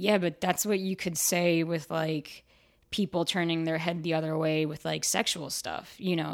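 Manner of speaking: ordinary delivery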